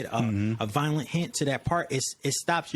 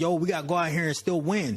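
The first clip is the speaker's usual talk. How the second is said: put-on screaming, higher pitch; 3 semitones higher than usual. Retelling a player urging the team on: imitating someone screaming. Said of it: "Stefon Diggs is screaming at the team like".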